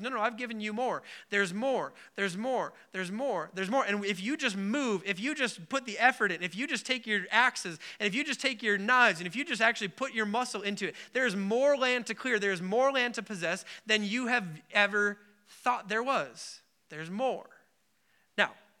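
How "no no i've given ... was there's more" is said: ordinary talk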